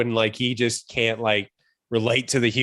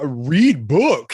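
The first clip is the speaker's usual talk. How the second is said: mumbling, hulking shark voice; 2 semitones higher, 4 dB louder than usual. Quoting the shark character from the movie: Sylvester Stallone as King Shark. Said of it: "the mumbling shark".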